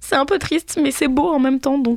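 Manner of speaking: mock tearful sniffling voice. Retelling their own reaction to two sad passages, mock-tearful sniffling. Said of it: "j'avais ma petite larme à l'œil et j'étais en mode « sniff".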